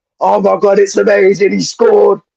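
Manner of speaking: mock wild, high-pitched, over-the-moon excited outburst. Describing AC Milan commentators when their team scores, imitating excited commentators. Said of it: "they're going off on one".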